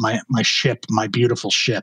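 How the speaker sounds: acted, wavering, quivering, choked-up voice with throat lump. Retelling an interview about seeing the wreck: imitating a quivering voice. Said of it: "his voice kind of quivers".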